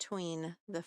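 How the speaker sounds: plain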